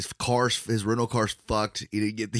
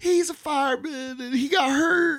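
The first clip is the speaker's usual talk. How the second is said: very high, drawn-out, put-on weepy fake sobbing; 4 dB louder than usual. Retelling a story, the speaker acts out a woman's fake crying. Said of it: "She starts the fucking fire and the waterworks".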